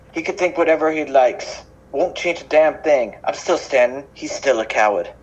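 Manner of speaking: acted English accent throughout, region unplaced. Playing a defiant man dismissing a senator, in a British accent. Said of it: "I love [name]'s British accent".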